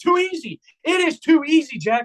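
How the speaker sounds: high-pitched, mock trolling, gloating, taunting tone. Retelling what he yelled whenever his team scored, retelling a gloating taunt. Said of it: "I was just doing the troll job".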